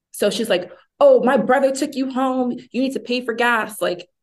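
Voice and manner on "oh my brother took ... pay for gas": high, demanding mock screaming. Retelling how a girl in the front seat yelled about gas money: imitating someone screaming. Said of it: "screaming at me".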